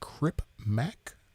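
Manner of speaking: whispered, hushed, breathy voice.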